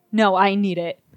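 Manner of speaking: icy, coldest possible tone. Retelling asking a friend for a hair tie, imitating Tabitha's cold tone. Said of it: "And just the most cold tone".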